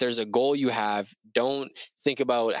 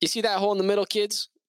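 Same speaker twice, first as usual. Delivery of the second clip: put-on southern American accent, pitched up; 8 semitones higher than usual. Retelling a strange find, quoting the guy who got out of his car in a southern accent. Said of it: "he had this like this southern like accent and he goes".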